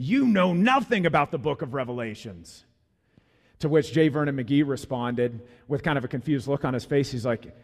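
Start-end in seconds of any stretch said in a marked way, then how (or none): 0.0-2.6 furious, confident, accusing angry outburst. Retelling a man storming into an office: imitating an angry outburst. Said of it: "with a great deal of confidence and anger and just unleashes".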